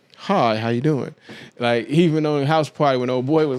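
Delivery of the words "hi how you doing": put-on buttoned-up man's voice. Mocking a guy with his shirt buttoned all the way up: imitating a buttoned-up guy talking. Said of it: "he talks like this".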